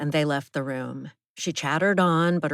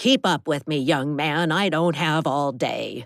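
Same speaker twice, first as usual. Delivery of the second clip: gravelly, raspy voice. Reading a story where the narrator tells a young man to keep up: gravelly voice. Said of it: "In a gravelly voice".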